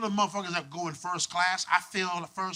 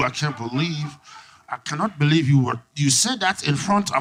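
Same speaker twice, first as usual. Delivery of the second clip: put-on speaking through clenched teeth; 5 semitones lower, 5 dB louder than usual. A speaker mimics how women talk when mad, imitating talking through clenched teeth. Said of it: "you start talking through your teeth".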